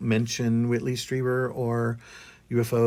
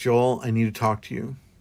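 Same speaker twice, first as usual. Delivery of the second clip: imitated very serious tone. Retelling what Walter said in the kitchen: imitating a very serious tone. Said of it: "it was a very serious tone".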